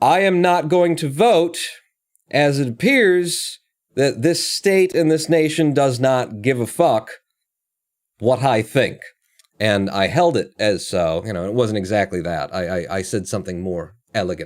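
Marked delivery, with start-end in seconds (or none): 0.0-9.0 play-acted loud declaration, pitched high. Retelling a protest announcement made in a voting precinct: retelling a loud declaration. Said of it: "and in a loud voice".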